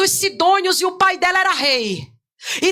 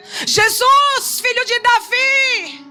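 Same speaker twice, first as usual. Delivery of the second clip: put-on very slow, high, drawn-out cry; 5 semitones higher than usual. Retelling how a woman at a closed door cried to Jesus: imitating a woman shouting. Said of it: "ela começa a gritar".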